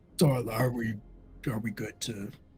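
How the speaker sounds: deep, hushed, unearthly, inhuman monster voice. A narrator voices a being at the ziggurat's foot addressing the players, deep inhuman voice. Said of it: "in a very uh, deep, inhuman voice".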